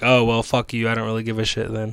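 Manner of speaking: put-on indifferent, mysterious voice. Acting out a mysterious guy answering someone who dislikes anime: imitating an indifferent mysterious guy. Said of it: "a mysterious guy would be like".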